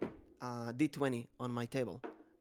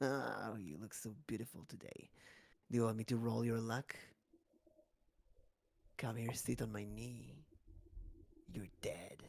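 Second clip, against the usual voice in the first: deeper, quieter voice; 6 dB quieter than usual. Voicing the dark future mimic character for the gamers, deeper voice. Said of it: "Kind of like deeper voice".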